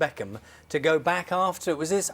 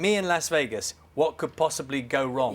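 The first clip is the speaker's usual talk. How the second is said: usual speaking voice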